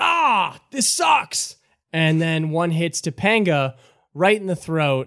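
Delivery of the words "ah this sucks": high, screaming cry. Voicing a goblin struck by magic missiles: screaming out. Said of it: "he screams out".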